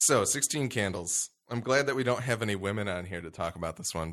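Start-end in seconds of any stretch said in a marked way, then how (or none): none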